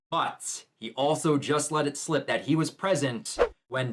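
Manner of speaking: plain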